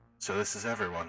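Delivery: ghost voice altered through a voice changer. Voicing a ghost character greeting the group: ghost voice through voice mod. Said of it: "the awesome, uh, ghost voice".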